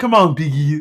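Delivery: froggy puppet voice. Showing off an impression you can only do in short stints, use a Kermit voice. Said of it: "I do a pretty good Kermit".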